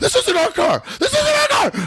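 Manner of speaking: mock very high alarmed panic with swooping pitch. Retelling what a passenger in the back seat said, acting out someone freaking out. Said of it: "He starts freaking out from the back seat".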